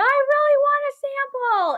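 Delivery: piercing, shrill, very high yell. Retelling how a woman whose sample expectations were unmet started yelling, retelling a yell. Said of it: "And she started yelling".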